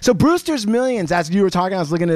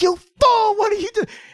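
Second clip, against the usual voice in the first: shrill, very high scream. Retelling a scene where John Candy screams at a man, John Candy screaming impression. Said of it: "John Candy's screaming at him".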